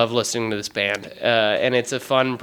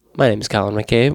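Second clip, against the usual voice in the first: put-on public-radio host announcer delivery; 2 semitones lower, 4 dB louder than usual. Introducing the podcast as if on public radio: NPR voice. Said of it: "so I have to do an N P R voice".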